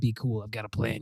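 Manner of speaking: low, soft, hushed aside.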